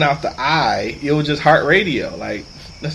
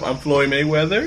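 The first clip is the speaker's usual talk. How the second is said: mock unsure, self-doubting, questioning tone. Picturing a man practicing at his mirror, said like he's questioning himself: mock-unsure tone. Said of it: "say it like he's questioning himself".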